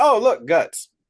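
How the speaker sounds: mock nonchalant, casual tone. Retelling a horror scene where a character points out carnage: nonchalant, imitating Doug. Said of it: "in the most nonchalant way".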